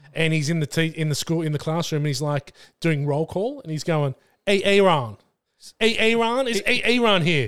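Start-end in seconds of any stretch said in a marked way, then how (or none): 4.5-7.5 loud, slow, pitched-up calling out. Retelling a comedy sketch doing roll call: Keegan-Michael Key as substitute teacher. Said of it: "there's a sketch where he plays a substitute teacher".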